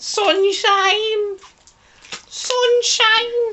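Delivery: Manchester accent. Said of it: "That's my Manc accent".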